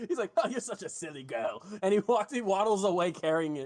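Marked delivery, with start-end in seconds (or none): 0.4-1.6 talking with words broken up by chuckles. Retelling what a man said as he walked away with it, imitating him laughing while talking. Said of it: "he just kind of laughs as he".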